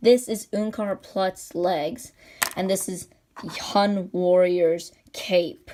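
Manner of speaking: slow, deliberate pronunciation.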